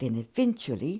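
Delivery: ordinary delivery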